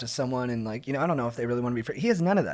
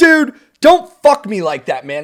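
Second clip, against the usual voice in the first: full-on, very loud, high-pitched screaming; 8 semitones higher, 13 dB louder than usual. Retelling a dad at a festival screaming at his buddy, retelling a scream. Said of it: "he's just screaming at the guy".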